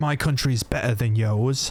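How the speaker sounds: fake, put-on British accent. Acting out people who say their country is better, in a put-on british accent. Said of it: "I don't know why I did the British accent".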